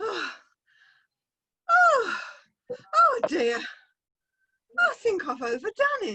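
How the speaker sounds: very high, slow, winded, out-of-breath gasping. A character arriving and asking to join others: out of breath. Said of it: "I will be when I catch my breath".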